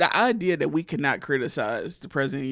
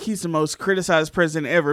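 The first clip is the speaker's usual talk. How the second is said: plain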